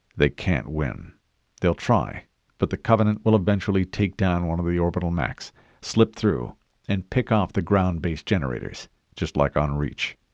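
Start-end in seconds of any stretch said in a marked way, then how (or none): none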